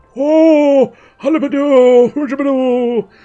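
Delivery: very high, loud comic voice, stretched "oh". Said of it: "that's turning a bit more Noel Fielding".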